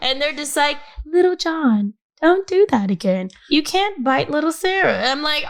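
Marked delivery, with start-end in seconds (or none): 1.1-4.9 gentle, unruffled, calm, mild scolding tone. Imitating relaxed parents at the park scolding a child: imitating a soft monotone parent. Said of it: "very, like, monotone, and they don't raise their voice".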